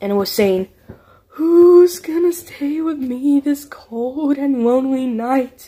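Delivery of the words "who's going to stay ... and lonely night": hollow, empty ghostly moan, sounding distant. Narrating a story, voice a figure calling from the distance at night: empty moaning voice. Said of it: "an empty voice out in the distance, moaning and groaning".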